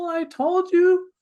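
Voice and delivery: put-on high, loud whiny voice like a sulking child. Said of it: "you're gonna have this little whiny voice".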